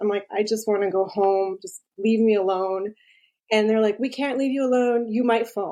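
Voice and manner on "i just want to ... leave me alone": acted-out crying, tearful voice. Retelling what she said to the nurses while on the toilet: retelling her own crying words. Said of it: "I'm sitting on the toilet and I'm crying".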